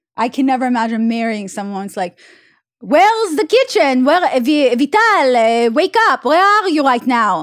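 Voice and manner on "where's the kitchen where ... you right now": drawn-out, put-on mock Israeli accent. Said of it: "I don't like that accent".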